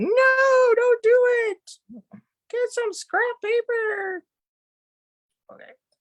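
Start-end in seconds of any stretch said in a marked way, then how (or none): 0.0-4.2 high, loud giggly voice. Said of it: "giggling, going".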